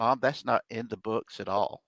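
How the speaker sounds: whispering. Retelling whispering to their mom in church during a guest's talk, retelling a whisper. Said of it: "I'm whispering to her saying".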